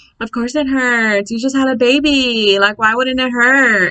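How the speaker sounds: put-on snide, condescending tone, word "baby" drawn out. Retelling a nurse dismissing a patient's pain: imitating condescending nurse. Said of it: "this fucking condescending nurse".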